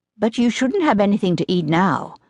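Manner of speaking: ordinary delivery, nothing marked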